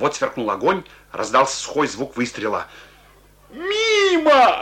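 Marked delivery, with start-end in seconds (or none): 3.5-4.6 gleeful, very high, drawn-out joyful shout. Reading a soldier's cry as he leaps at the man who fired, joyful shout. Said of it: "радостно крикнул солдат".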